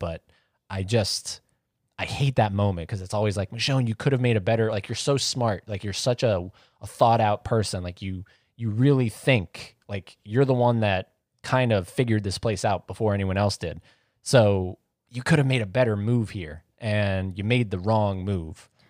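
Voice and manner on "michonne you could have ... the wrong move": ordinary talk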